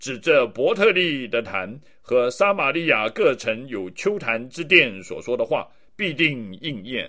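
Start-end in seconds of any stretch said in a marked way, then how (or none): none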